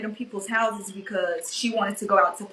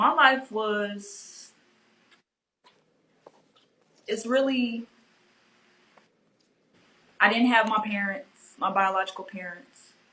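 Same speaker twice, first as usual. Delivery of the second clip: voice choking up, holding back tears. Answering how they were raised, holding back tears. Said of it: "I'm trying not to tear up".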